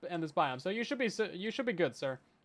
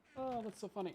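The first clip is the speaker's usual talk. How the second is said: very depressed, gloomy voice, quieter; 11 dB quieter than usual. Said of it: "He says in the most depressed voice".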